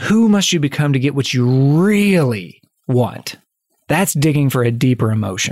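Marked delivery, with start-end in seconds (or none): 0.0-3.4 really heavily emphasized. Posing a question about who you must become, strong stress on really. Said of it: "I mean it when I say it with like emphasis".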